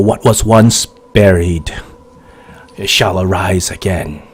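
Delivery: hushed, soft half-whispered stage whisper. Voicing an unseen voice at the temple gates: half-whispering voice. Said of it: "a voice whispers".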